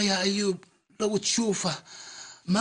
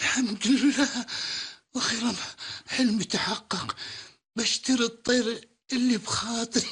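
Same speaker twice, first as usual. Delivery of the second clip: happy tears, voice breaking mid-phrase, halting. A man finally buying the bird he longed for: crying with joy. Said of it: "يبا ليش تبكي يبا؟".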